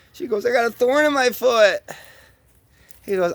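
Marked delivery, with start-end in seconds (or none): 0.4-1.8 fake elephant crying, higher pitch. Telling a joke, voicing a lady elephant with a thorn: mock crying elephant. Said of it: "And she's fucking crying".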